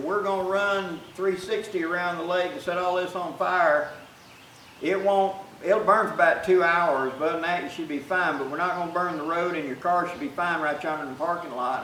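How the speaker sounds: ordinary talk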